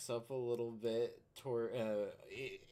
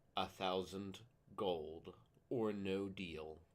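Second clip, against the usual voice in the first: menacing, threatening, intimidating tone; 4 semitones lower, 3 dB quieter than usual. A player's character walks over and stares down a man, intimidating. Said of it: "I would like to roll intimidation".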